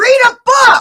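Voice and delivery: shrill, high-pitched yell. Ranting about a person who won't look things up, yelling. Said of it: "I didn't mean to yell".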